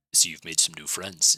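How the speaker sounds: very low, deep, growly voice. Voicing a fellow who is grilling Keith: very low, growly voice. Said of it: "speaking in a very low, growly voice".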